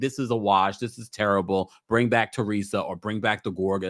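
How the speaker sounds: ordinary talk, nothing marked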